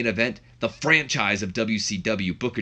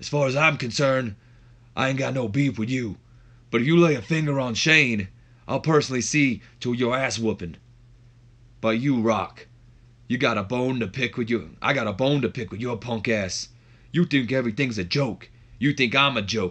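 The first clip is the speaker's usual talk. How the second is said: put-on raspy voice. Retell what he says to Triple H and Rock, in a raspy Stone Cold voice. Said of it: "gonna sound stone cold so bad with this this raspy voice".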